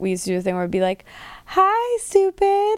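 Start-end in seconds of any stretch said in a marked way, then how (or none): 1.4-2.8 cheerful, very high-pitched voice. Retelling what the family used to say to their dog: imitating a happy voice. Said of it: "Like, in a happy voice".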